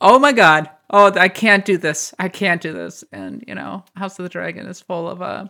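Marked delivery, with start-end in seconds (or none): 0.0-3.0 put-on panic, louder. Retelling a show character facing a decision, the speaker acts out his panic. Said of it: "He's like, I'm panicking".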